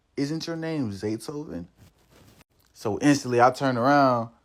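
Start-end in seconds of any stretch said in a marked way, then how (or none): 0.1-1.6 gentle, soft-spoken, hushed delivery. Retelling a girl asking his name at the pool table: imitating a soft voice. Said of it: "it's this soft voice that just says".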